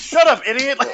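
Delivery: very high-pitched, angry yell. Retelling a movie scene where the dad yells back at someone: retelling a yell. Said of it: "he just yells back at him".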